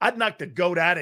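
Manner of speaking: usual speaking voice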